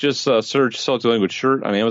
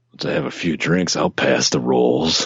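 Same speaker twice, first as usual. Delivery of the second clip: put-on weird, creepy voice, lower; 6 semitones lower than usual. Joking about Thanksgiving drinks: weird creepy Uncle Tickle voice. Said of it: "if you say anything in that voice, it comes across weird and creepy".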